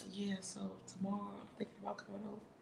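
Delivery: very soft, hushed, smooth, husky sexy murmur. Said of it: "like real sexy".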